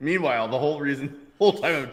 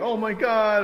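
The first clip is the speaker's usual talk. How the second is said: mock tearful wail, very high-pitched crying outburst; 9 semitones higher than usual. Retelling a crash where the other driver was crying: imitating someone crying. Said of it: "She was, like, crying, like".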